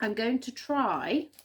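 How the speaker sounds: stress on try, stretched out slowly.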